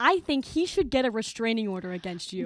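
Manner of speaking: ordinary talk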